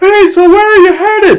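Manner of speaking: put-on very loud, high yell. Retelling a game scene with a companion on the bike: imitating Deacon yelling over wind. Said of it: "Deacon will yell as if he's getting blown in the face with wind".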